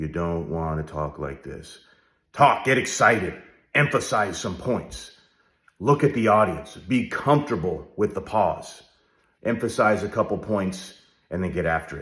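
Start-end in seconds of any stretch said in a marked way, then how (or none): 0.0-1.8 dry, flat monotone, much quieter. Coaching on how to present, showing how not to talk: dry monotone. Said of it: "Don't be dry as you proceed through".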